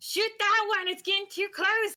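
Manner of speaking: very high, shrill, feminine goblin voice, shouting. Narrating a fight, the speaker voices a goblin shouting, feminine goblin voice shouting. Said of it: "a distinct feminine goblin voice shouting".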